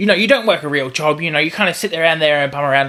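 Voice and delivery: heated, angry, irritated tone. Retelling what a brother says about the speaker's work: imitating an angry brother. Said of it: "when he gets angry".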